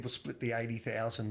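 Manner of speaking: normal talking voice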